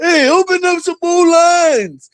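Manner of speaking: put-on very high-pitched old-man holler. Retelling how an old man on a scooter yelled in a line, imitating an old man yelling. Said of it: "You yelling".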